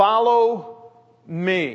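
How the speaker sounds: very slow, very emphatic follow me.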